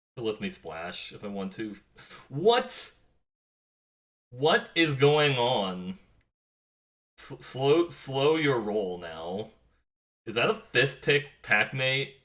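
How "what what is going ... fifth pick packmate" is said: full-on astonished yell, loud, high and drawn out. Drafting cards and getting an absurd fifth pick, yelling. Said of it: "I'm yelling now".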